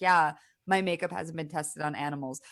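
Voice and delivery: ordinary talk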